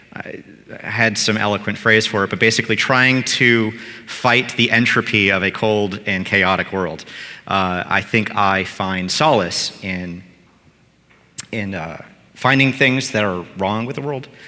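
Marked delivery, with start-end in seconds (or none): 7.8-14.2 choked-up voice catching with emotion. Speaker, unexpectedly emotional while talking about themself, is choked up. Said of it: "I'm getting all choked up".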